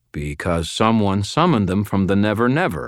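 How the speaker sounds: plain reading voice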